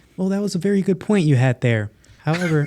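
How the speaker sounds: put-on text-to-speech voice. Imitating an AI-written Senate speech: put-on AI voice. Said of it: "that's your A I voice?".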